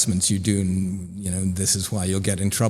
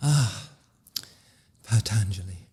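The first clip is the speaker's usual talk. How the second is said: put-on yoga voice with a little sigh. Mocking how yoga teacher training mentions the Yoga Sutras: put-on yoga voice with a little sigh. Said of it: "you have to do it with a little sigh and a yoga voice".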